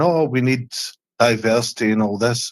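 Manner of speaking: ordinary talk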